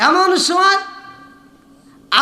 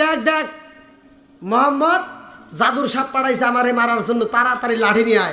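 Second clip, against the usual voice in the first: ordinary delivery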